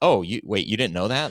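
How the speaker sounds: usual speaking voice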